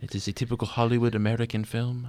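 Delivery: offhand, casual, put-on French accent. Discussing a Danish film with a co-host, speaking in a French accent. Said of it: "I don't know why I'm doing a French accent".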